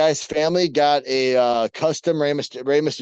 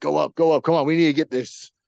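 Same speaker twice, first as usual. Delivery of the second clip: put-on excited whispering. Retelling how someone urged another on during a negotiation: imitating someone whispering excitedly. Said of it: "like a little kid whispering to Lita".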